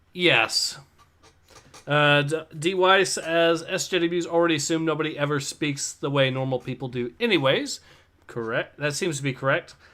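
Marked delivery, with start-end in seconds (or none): none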